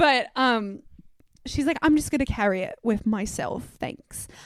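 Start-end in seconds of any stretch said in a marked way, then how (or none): 1.8-4.3 put-on Australian woman's accent. Retelling what an australian woman told a shop owner: imitating an australian accent. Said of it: "I'm not gonna continue to do the accent".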